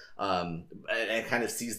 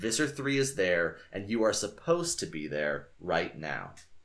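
plain

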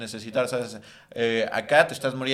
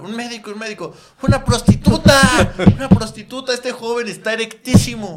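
shrill, very high, loud, urgent shouting; 10 semitones higher, 11 dB louder than usual. Retelling a scene where a waiter shouts out, imitating someone shouting. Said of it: "el mesero en vez de gritar".

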